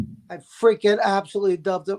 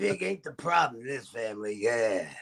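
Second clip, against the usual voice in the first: low, deep put-on impression voice. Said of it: "Do I use my Harvey Fierstein voice?".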